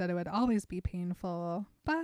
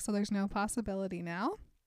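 plain

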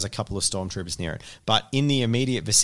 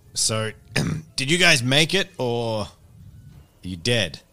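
stoic, restrained, slightly strained voice; 4 semitones higher, 3 dB louder than usual. Game master voicing a figure over the players' comms, stoic, slightly strained voice. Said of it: "a stoic voice that sounds a bit strained says".

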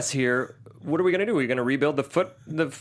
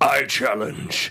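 put-on ominous bad guy voice. Imitating a villain's line from a movie clip: hilariously ominous Shredder voice. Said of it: "right before that he goes".

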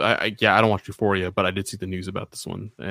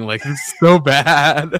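very slow words broken up by laughing; 6 semitones higher, 8 dB louder than usual. Reacting to the other speaker's nervous laughter over bad news, laughing while talking. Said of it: "I'm laughing because you're laughing".

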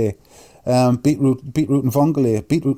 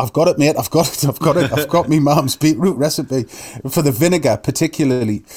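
ordinary talk

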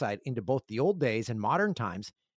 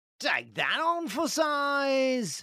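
put-on British accent, very high pitch; 13 semitones higher than usual. Describing a Brit fully embracing Canada: put-on British accent. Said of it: "that was a pretty good accent".

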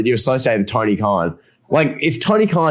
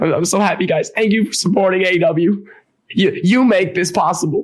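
high, stammering, mock weepy crying voice; 6 semitones higher than usual. Act out an imagined AEW promo in front of an arena crowd, imitating Tony Khan crying. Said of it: "he'd be like legitimately like crying".

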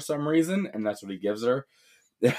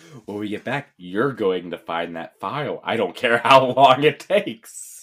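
slow, drawn-out, worked-up freak-out; 3 dB louder than usual. Retelling a film scene where the boss character starts freaking out: imitating someone freaking out. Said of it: "he starts freaking out".

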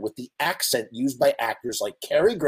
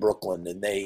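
ordinary talk

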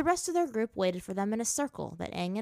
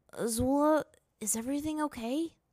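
hesitant, careful, slow, pitched-up tentative delivery; 7 semitones higher than usual. He asks a woman a question, tentative. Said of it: "his voice tentative".

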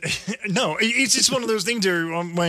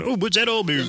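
mocking Canadian accent, higher pitch; 3 semitones higher than usual. Mocking how Canadians talk: mocking Canadian accent. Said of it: "as we make fun of Canadians going".

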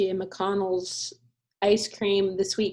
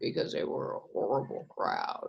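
low, breathy, bro-y dude voice; 13 semitones lower, 8 dB quieter than usual. After trying to go low, the speaker repeats the line in a low bro-y voice. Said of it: "You sound very, very bro-y when you go low".

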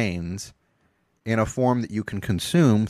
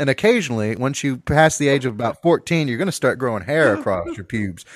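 ordinary talk, nothing marked

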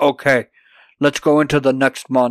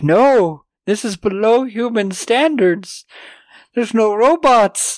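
mock whining, high and dragged out; 9 semitones higher than usual. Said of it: "Polly's just whining".

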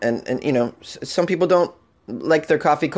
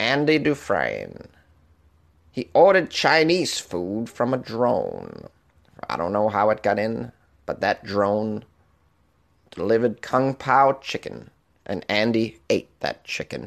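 slow put-on voice with swooping, rolling pitch; 4 semitones lower, 3 dB quieter than usual. Joking about a drone delivering to a prisoner: Morgan Freeman impression. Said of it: "Is that a good Morgan Freeman?".

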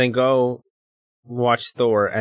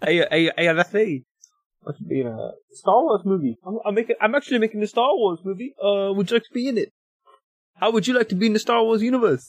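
put-on New Zealand accent, much higher; 9 semitones higher than usual. Chatting with others, a speaker breaks into a Kiwi accent. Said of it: "That's [name]'s classic Kiwi accent".

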